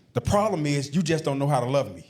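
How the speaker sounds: usual speaking voice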